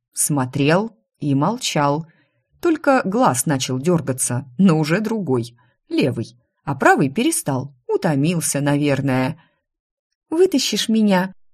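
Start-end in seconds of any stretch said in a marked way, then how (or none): 10.3-11.3 wheedling, fawning, ingratiating tone. Stuck, the narrator appeals to silent Marco in an ingratiating plea. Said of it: "Заискивающе попросила я".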